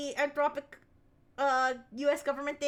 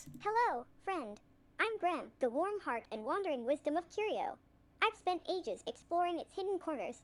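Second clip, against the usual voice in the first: small, soft, alien-like voice; 2 semitones higher, 6 dB quieter than usual. A toy's recorded character greets the listener in a little alien voice. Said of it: "I like how it sounds like a little alien".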